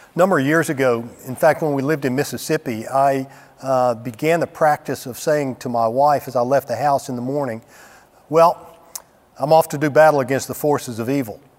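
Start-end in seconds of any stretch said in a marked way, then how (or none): none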